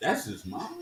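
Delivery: very soft, under-the-breath, hushed put-on character voice. Retelling a game broadcast, imitating Walt Clyde's reaction. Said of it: "And Walt Clyde come on the thing like".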